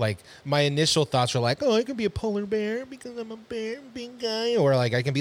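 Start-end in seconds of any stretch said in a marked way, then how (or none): 1.6-4.6 high, soft, silly put-on voice. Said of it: "What was that voice?".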